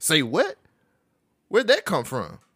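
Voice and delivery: put-on sassy voice, full of attitude, swooping. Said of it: "I didn't have to do it with the attitude voice".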